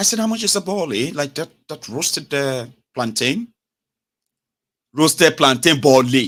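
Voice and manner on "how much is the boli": put-on, pitched-up British London accent. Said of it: "They don't get accent. Innit?".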